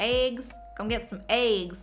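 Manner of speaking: put-on Southern US accent on eggs. Imitating how some Americans speak: put-on southern accent. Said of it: "That southern accent?".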